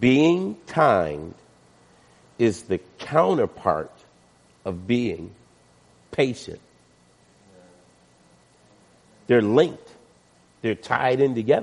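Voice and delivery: unhurried, slow, deliberate, each word set down. A speaker talking to listeners, saying it slow so it sinks in. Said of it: "I'm saying this slow".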